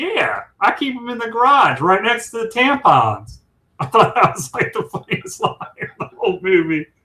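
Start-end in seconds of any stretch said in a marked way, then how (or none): 0.0-3.4 put-on effortful, high, swooping, sing-song Texas accent. Retelling a funny movie line said to the Ed Helms character, do Chris Hemsworth attempting a Texas accent. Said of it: "because he's trying to do that Texas accent".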